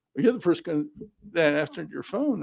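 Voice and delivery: ordinary talk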